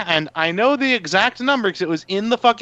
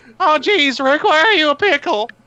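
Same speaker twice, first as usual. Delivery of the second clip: high-pitched voice randomly cracking, higher; 8 semitones higher than usual. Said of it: "in a voice that randomly breaks for no reason".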